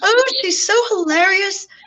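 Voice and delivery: little, high-pitched fairy godmother voice. Retelling what a being said about the speaker: little Disney fairy godmother voice. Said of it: "She sounded like a little Disney fairy godmother".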